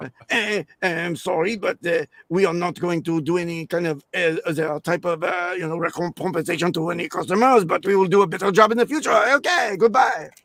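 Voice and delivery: English spoken with a put-on French accent. Speaker acting out a French company president's apology, in a French accent. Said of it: "So I have to do the French accent".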